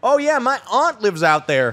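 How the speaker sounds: put-on Southern accent. Retelling a coworker's sales calls, imitating his fake Southern accent. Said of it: "fake a Southern accent the entire time".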